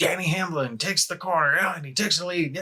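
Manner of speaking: excited sports announcer voice. Describing a gamer's racing video, speaker quotes his commentary in a race announcer voice. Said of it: "he sounds like an announcer".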